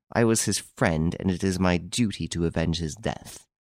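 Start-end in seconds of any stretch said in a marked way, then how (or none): none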